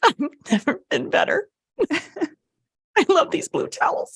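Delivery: acted, very high-pitched, weepy overjoyed voice. Retelling a shopper at checkout in a story: retelling tearful joy. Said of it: "she's crying, tears of joy".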